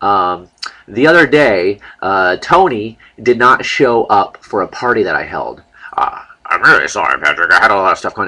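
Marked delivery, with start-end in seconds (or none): 5.9-8.3 low, dropped put-on character voice. Making the spatula apologize for missing a party: Tony the talking spatula voice. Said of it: "my talking spatula".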